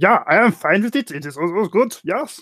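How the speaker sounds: put-on German accent. Answering as the German character whether the doctor can be untied: German accent. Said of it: "That was a pretty good impression".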